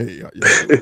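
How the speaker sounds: silky smooth voice. Imitating his brother greeting everyone in the morning, imitating Ken's smooth voice. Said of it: "he literally got the true uh uh quiet storm voice".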